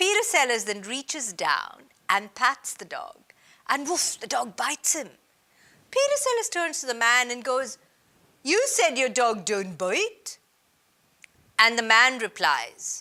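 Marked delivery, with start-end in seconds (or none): 8.4-10.4 put-on French accent tinged with Indian pronunciation. Retelling an anecdote, Peter Sellers turns to the man after the dog bites him; Peter Sellers French accent. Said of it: "That's my Indian version of a French accent".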